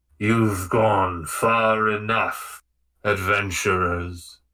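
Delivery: deep, rumbling voice echoing as in a cavern. A voice in the cavern speaks to the adventurers: rumbling voice. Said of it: "A voice rumbles and says".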